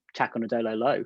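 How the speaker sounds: totally expressionless, flat, deadpan delivery. Recalling a post-match interview answer to the person who gave it, imitating a deadpan reply. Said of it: "you just deadpan were like".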